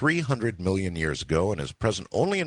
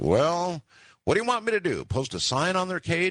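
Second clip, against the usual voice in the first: mock squeaky, very high, biting, sarcastic voice; 11 semitones higher than usual. Retelling his wife's answer: imitating a sarcastic reply. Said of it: "she said this rather sarcastically".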